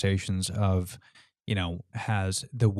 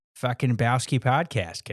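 Boston accent put on for fun; 4 semitones higher than usual. Riffing on the podcast name, the speaker tries it in a Boston accent. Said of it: "I want to throw on like a Boston accent to it".

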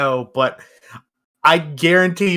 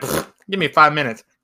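usual speaking voice

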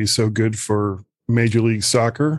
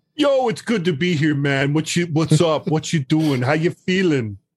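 bad, fake New York accent, sounding Jamaican; 5 semitones higher than usual. Guest welcomed back on the show greeting the host: bad new york beach accent. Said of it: "You Jamaican?".

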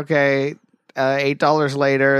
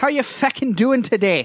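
awful put-on Irish accent, pitched very high; 9 semitones higher than usual. On St. Patrick's Day, the speaker greets the other speaker in a bad Irish accent. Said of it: "I put on that awful, awful garbage Irish accent".

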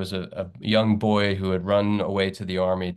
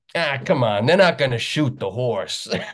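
put-on loud, called-out New York accent; 5 semitones higher, 4 dB louder than usual. At a tense moment in a show, the speaker retells an audience member's loud new york accent. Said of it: "this loud New York accented voice goes".

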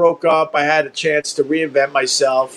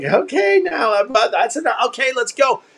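put-on nervous laugh of a man, much higher; 8 semitones higher than usual. Retelling how Carl would react to the speaker, imitating Carl's nervous laugh. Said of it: "this kind of nervous, like, kind of laugh".

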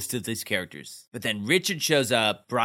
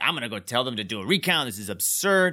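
plain

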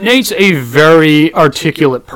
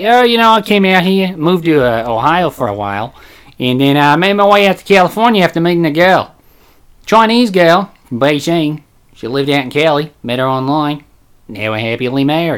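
imitated Australian accent. Retelling the speaker's made-up answer to a man's questions, imitating an Australian accent. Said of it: "an Australian accent".

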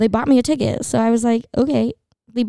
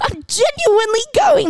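mock very high-pitched shout; 12 semitones higher than usual. Retelling how a friend yelled at security: imitating a friend yelling. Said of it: "she yells at security".

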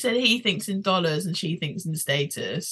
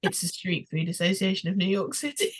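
mock deadpan, matter-of-fact, unimpressed, no fuss. Retelling a man's reply on a dating show: imitating a deadpan reply. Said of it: "he really deadpan just goes".

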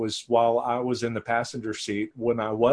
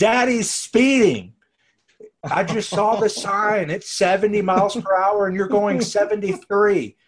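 put-on shrill, very loud childish scream at top of lungs; 10 semitones higher, 7 dB louder than usual. Retelling the youngest daughter waking during the drive: imitating a child screaming. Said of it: "she screams at absolute top of her lungs".

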